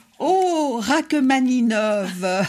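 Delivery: high, drawn-out, dramatic exclamation.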